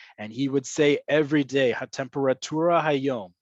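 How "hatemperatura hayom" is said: put-on Hebrew spoken with a thick, obvious Anglo accent. Imitating a radio meteorologist giving the weather: imitating thickest Anglo accent. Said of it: "with the thickest Anglo accent you can think of".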